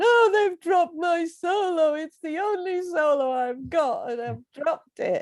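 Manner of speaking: put-on crying voice. Speaker recounts phoning home, newly married, after her solo was dropped, imitating own crying. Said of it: "crying down the phone".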